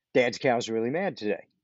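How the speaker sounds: normal talking voice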